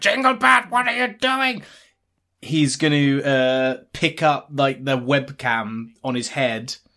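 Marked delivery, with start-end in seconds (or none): 0.0-1.6 very high, shrill, loud shouting yell. Voicing Cratchit yelling over the microphone at Jinglebert: imitating a yell. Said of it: "yelling on the other end of the microphone".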